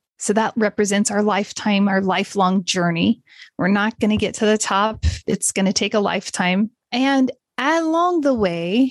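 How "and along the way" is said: very slow with a slight British accent. Speaker addressing listeners, words coming out slightly British-sounding. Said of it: "it sounded a little British".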